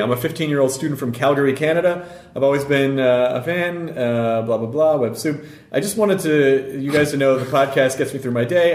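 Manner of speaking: ordinary talk, nothing marked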